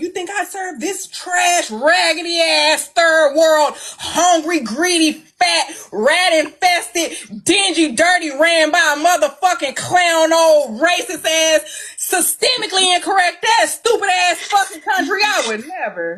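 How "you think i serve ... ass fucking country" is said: yelling, much higher and louder. Answering another person's question, then apologizing for yelling at them: yelling. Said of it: "I'm sorry for yelling at you".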